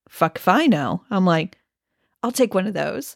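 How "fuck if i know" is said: put-on deadpan delivery, slower. Retelling another person's answer to the speaker's question, a put-on deadpan reply. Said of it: "But he was so deadpan".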